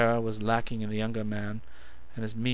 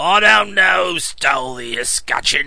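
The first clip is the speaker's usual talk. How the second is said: very loud, high, snarling mock Cockney voice; 5 semitones higher, 10 dB louder than usual. Narrator reads the coachman mimicking the question flung at him, snarled mocking mimicry. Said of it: "snarled the coachman".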